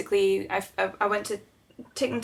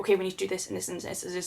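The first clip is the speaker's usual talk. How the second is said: fast, flat, focused put-on robotic monotone; 5 dB quieter than usual. Retelling own words while panicking over a sick pet: imitating own monotone focused voice. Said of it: "go kind of monotone and really focused".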